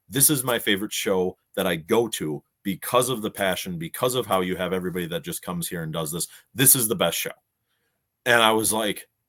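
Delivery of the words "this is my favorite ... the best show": normal talking voice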